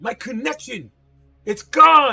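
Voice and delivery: shrill, very loud, high-pitched alarmed yell. Voicing a cry heard again in the cathedral: loud voice. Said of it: "you'll hear in that loud voice again".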